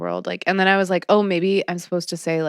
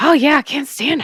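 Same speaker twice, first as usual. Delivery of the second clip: chalky, scratchy voice with raised pitch; 8 semitones higher, 5 dB louder than usual. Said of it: "That's a pretty good impression".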